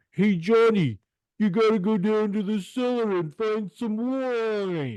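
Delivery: put-on very high, heavy New York accent, "wine" stretched. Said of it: "Tom Selleck's mustache in his terribly New York accent".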